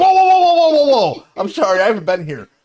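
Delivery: loud, high, cautious-sounding inner voice. Acting out the brain part that stops bad ideas: voicing the cautious part of his brain. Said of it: "that one part of my brain that tells me not to do shit finally woke up and was like".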